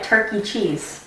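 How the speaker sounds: put-on soft murmur. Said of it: "But I said it really softly".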